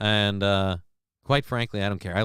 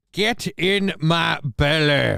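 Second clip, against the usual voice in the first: put-on vaguely Scottish voice, higher; 6 semitones higher, 3 dB louder than usual. Joking about the senator's voice: Fat Bastard voice. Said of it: "That's where I went with Fat Bastard".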